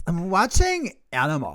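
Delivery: put-on speech impediment. Showing the other person how they sound when they respond, imitating someone with a speech impediment. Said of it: "So I suddenly have a speech impediment".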